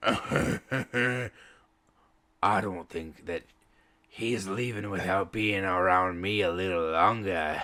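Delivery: low, husky, growling voice. Narrating a scene, a half-orc woman speaks up in a husky, growling voice. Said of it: "husky, growling voice just go".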